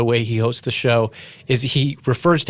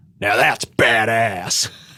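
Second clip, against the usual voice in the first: play-acted voice-over voice, dubbed in. Imitating a show host's dubbed-in line over footage: imitating a loud dubbed-in voice. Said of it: "And he'll go".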